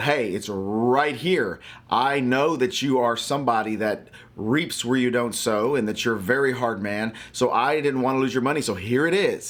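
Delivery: ordinary talk, nothing marked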